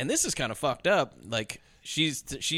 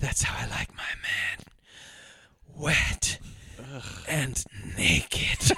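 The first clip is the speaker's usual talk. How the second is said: very slow, sultry, sexy voice. Retelling a movie character's line to friends: imitating a sexy line reading. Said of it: "I'm gonna try to do it in this sexy".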